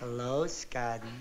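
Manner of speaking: sweet-sounding, very low voice. Showing a reluctant partner how to greet a boy in the schoolyard, very sweet-like. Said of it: "you walk up to him very sweet-like".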